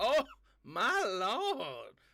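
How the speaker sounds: very strong put-on Southern accent, high and sing-song. Describing how she wanted a character fanning herself to speak, very southern accent. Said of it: "I wanted her to have a very southern accent".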